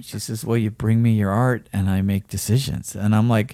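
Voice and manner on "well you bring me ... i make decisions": put-on prim, proper woman's voice, lower and quieter. Retelling what the gallery woman said: imitating a prim and proper woman. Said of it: "she's very prim and proper".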